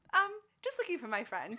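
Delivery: earnest, innocent voice. Retelling what a friend said to a boss while searching dumpsters: imitating Jordan, innocent and sweet. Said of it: "That's exactly how she sounds".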